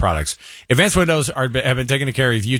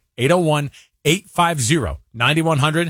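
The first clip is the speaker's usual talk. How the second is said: slower, unhurried, careful, deliberate repeat; 4 semitones higher than usual. Repeating the phone number a second time: said slower. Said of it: "Let me say it slower".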